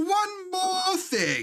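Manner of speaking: very high, slow, swooping, stretched-out voice. Retrying an impression after the mic cut out, as Uncle from Jackie Chan Adventures. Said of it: "my imper- impersonation of Uncle from Jackie Chan Adventures".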